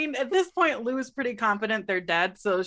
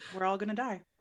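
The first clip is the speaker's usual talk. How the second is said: soft, low mutter under the breath; 2 semitones lower, 8 dB quieter than usual. Voicing a character who turns to another character: said under her breath. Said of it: "under her breath".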